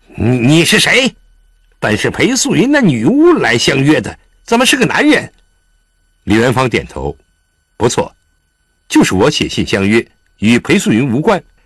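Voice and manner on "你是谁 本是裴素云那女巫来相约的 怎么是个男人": suspicious, doubtful, scornful, much higher. A man questions the stranger he has been sizing up, suspicious and contemptuous. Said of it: "用怀疑而轻蔑的口吻问".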